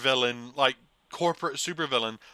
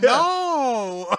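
put-on flustered parent voice, higher and louder; 10 semitones higher, 7 dB louder than usual. Imitating parents who can't control their child: Mark Wahlberg in The Happening. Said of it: "You sound, sound like Mark Wahlberg in The Happening".

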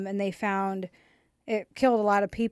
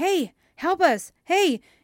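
loud, high yell. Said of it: "they hear somebody yelling".

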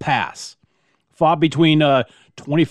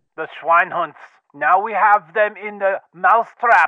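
horrible put-on German accent; 3 semitones higher than usual. Telling of the Prussian guns at Sedan, quote a Prussian in a bad German accent. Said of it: "My German accent and my French accent are horrible".

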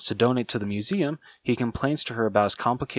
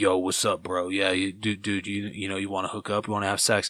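put-on, super deep dude voice; 3 semitones lower than usual. Speaker acts out how a stranger might talk, in a super deep bro voice. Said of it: "talking, like, super deep".

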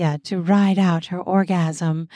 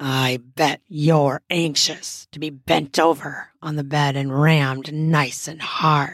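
low, rough-edged growling voice; 4 semitones lower than usual. Narrator voicing Grant speaking to Sathya, growling. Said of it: "He growled out".

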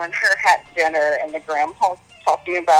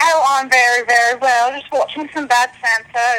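put-on joking Whitechapel London accent; 7 semitones higher than usual. Answering a phone call, joking in a put-on Whitechapel accent. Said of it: "I don't know why I'm talking like this".

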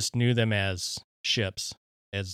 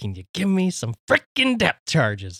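put-on manic villain voice, higher and louder; 8 semitones higher, 7 dB louder than usual. Doing a captain asking for depth charges: Jack Nicholson as the Joker. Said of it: "like, the Joker thing".

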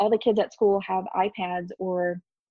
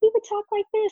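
really high-pitched voice. Remembering how he used to talk, demonstrate Braden's really high-pitched voice. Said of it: "talk in a really high pitched tone".

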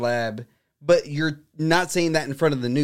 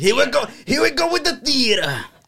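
put-on harsh Bronx-tinged voice, higher pitch; 9 semitones higher, 3 dB louder than usual. Doing an impression while quoting a Senate exchange: Fauci impression. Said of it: "my Fauci's gotten better".

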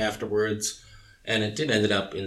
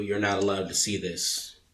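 normal talking voice

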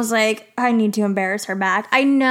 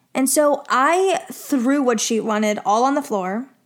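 normal talking voice

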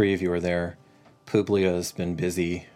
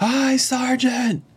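very high, shrill, loud group scream; 7 dB louder than usual. Voicing trained missileers answering their sergeant: screaming a greeting back. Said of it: "scream back".

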